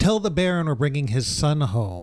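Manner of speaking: plain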